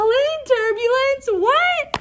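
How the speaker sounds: very high cry, baffled and disbelieving.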